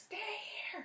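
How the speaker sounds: play-acted, very high, loud, carrying holler. Telling a story, mom calling across the parking lot: imitating mom yelling. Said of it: "carrying across the parking lot because she's really loud".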